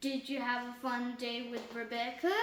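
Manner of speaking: ordinary delivery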